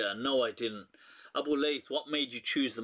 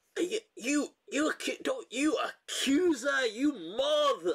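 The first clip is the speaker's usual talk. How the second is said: very high, drawn-out, outraged, furious outburst; 13 semitones higher than usual. Retelling a viral clip where a woman flips at a shopper: imitating her furious outburst. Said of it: "And the way she says it".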